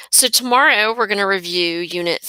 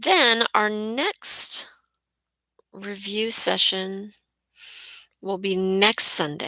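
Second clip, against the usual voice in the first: drawn-out, very slow, measured, deliberate delivery; 2 semitones higher than usual. Announcing the next review session, speaking really slowly. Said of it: "I'm speaking really slowly".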